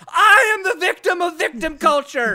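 all-out shouting, very loud and high. Proposing a second alternate chapter title to the other speaker, shouting. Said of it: "also shouting".

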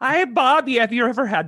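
attempted Wisconsin accent. Told they should have a Wisconsin accent, the speaker tries an attempted Wisconsin accent. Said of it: "all I can do Wisconsin wise is like".

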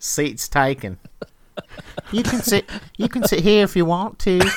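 put-on little girl voice. Friends re-enacting the bus scene from Forrest Gump, in a little girl voice. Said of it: "his little girl voice".

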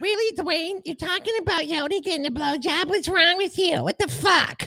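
high-pitched, put-on Bronx accent. Podcaster scolds a co-host named Dwayne, in a put-on Bronx accent. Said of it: "New York, Brooklyn, Bronx, bitch".

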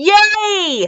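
high-pitched excited squeal, stretched out long. As a man lugs the tree in, she rushes to close the door: excited squeal. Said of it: "Bella squealed excitedly".

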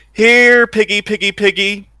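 yelling out. In the game, speaker calls for a Pegasus: yelling out. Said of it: "I'm going to yell out".

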